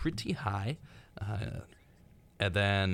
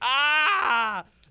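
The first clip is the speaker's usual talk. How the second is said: high, loud, fearless yell. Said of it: "to show he wasn't scared by yelling".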